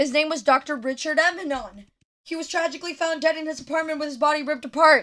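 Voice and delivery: rushed, rattled-off reading at breakneck speed. Reading the detective story text aloud: reading really, really fast. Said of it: "I know I'm reading really, really, really fast".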